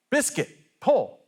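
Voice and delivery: mock farmer's call, very high and shrill. Telling a joke, acting out the farmer yelling to his mule: retelling a farmer's yell. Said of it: "the farmer yells out".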